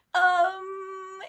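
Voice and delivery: loud, high, giddy squeal of excitement. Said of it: "It was very exciting".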